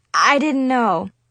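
plain

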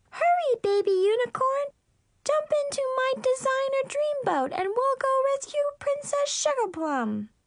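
very high, squeaky doll-play voice. A playmate voices her magic baby dolphin toy in a high squeaky voice. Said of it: "changed her voice to a high squeak".

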